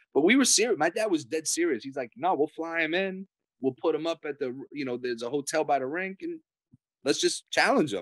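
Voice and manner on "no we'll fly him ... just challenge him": ordinary delivery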